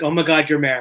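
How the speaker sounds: normal talking voice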